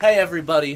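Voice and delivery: very loud, high-pitched shouted yell. Opening the podcast to listeners, yelling. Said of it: "Oh, I'm yelling".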